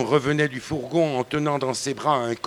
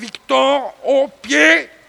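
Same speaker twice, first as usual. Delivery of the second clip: shrill, very high-pitched shout; 11 semitones higher, 7 dB louder than usual. The master of the house yells an order at his servant, a shrill yell.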